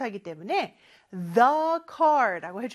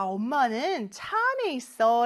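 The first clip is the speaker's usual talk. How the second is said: normal talking voice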